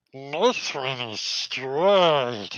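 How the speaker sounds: very slow drawn-out voice. Voicing a goblin archer pulling out a straight arrow: Gollum voice. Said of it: "He sounds like Gollum now".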